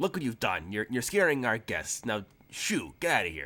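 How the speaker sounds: put-on goblin character voice. The narrator voices a goblin turning back to the big guy: goblin voice. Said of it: "the goblin guy".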